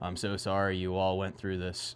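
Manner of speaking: play-acted low, utterly flat monotone, no inflection. Recapping a series, quoting a detective: monotone Detective Bailey impression. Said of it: "Detective Bailey goes in like the most monotone way".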